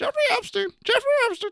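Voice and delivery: very high, squawking parrot voice. Doing the parrot voice, now a parrot into conspiracy theories: conspiracy theory parrot voice. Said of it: "parrot that follows conspiracy theories".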